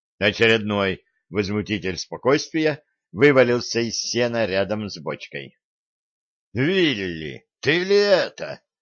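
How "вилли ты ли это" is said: slow, scornful, sneering, mocking snort. A man recognises someone tumbling out of the hay, with a mocking snort. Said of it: "насмешливо фыркнул Гордон".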